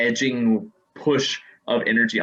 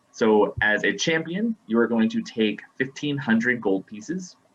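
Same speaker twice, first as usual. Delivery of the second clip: usual speaking voice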